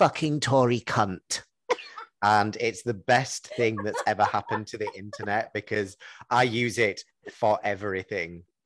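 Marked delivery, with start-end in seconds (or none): 0.0-1.4 put-on posh, prim, dispassionate and utterly unbothered. Retell how a lady read out an offensive message sent to an mp: imitating a dispassionate, posh voice. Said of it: "in the most dispassionate, posh voice".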